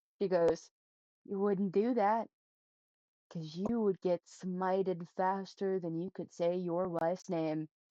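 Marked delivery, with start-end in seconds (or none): 1.3-7.7 whispered, threatening tone. Voicing a character who warns another in her ear: whispering a warning. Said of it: "she whispers into Blair's ear".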